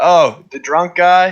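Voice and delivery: screaming it out, high and loud. Playing a character as an unconscious man is brought in, screaming. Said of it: "I just scream".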